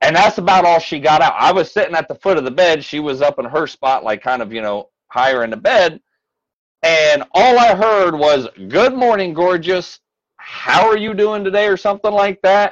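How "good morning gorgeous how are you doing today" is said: mock bright, cheery little tone, pitched up. Retelling how she greeted the speaker in the morning, imitating a joyful little tone. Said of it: "a joyful little tone".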